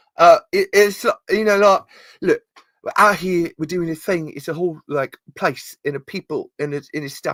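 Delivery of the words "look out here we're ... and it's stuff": terrible put-on British accent, pitched up. Trying to be Tim Roth from Lie to Me: terrible British accent. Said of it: "This is a terrible British accent, but I'm trying to be Tim Roth".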